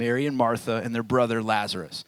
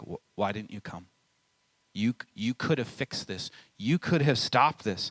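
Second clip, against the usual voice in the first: hurt, grieving, stumbling, accusatory, reproachful tone. Retelling Martha's words to Jesus after her brother died: mock accusatory tone as Martha. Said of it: "Little accusatory in her tone".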